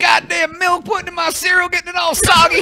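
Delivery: hateful put-on southern drawl, pitched very high. Joking that a southern twang makes anything sound hateful, mock southern twang. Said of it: "If you put a southern twang on anything".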